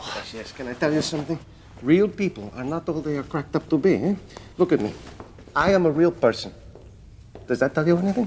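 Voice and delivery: put-on generic continental accent from nowhere specific. Speaking as a butler to the prince: vague european accent. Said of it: "Something European".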